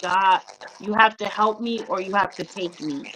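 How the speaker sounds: ordinary talk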